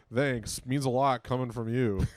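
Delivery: ordinary talk, nothing marked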